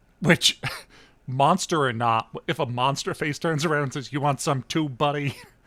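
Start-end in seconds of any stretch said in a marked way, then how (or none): 4.1-5.4 put-on New York policeman voice and accent. Describing a dream scene where a monster cop turns around, New York cop accent. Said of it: "in like a New York cop accent".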